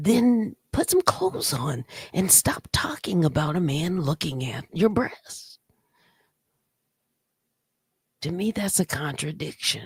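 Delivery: hushed whisper. Answering a viewer's request to whisper it: whispering. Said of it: "Okay, I'll whisper".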